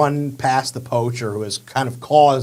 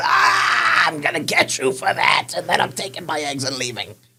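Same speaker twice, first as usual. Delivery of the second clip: hurt, pained voice, reeling in pain; 2 semitones higher than usual. Voicing a poacher stumbling back after a slash: poacher in pain. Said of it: "start stumbling back in pain".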